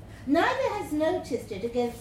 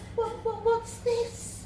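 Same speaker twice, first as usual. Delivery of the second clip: very high, quavering, wobbling, stammering voice; 10 semitones higher than usual. Narrator voices a woman in a story, wobbling voice. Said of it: "her voice wobbles".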